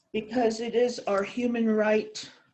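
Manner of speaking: normal talking voice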